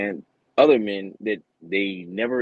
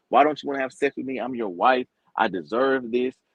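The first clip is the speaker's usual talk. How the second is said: pushy, accusing, aggressive, demanding complaining tone; 4 semitones higher than usual. Retelling a show where a wife spoke to her husband: imitating an aggressive wife. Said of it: "real aggressive".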